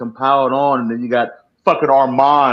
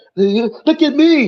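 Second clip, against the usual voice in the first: put-on little kid voice, pitched very high; 14 semitones higher than usual. Describing kids who jump around dancing: imitating a little kid. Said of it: "dumbass dance that all kids do".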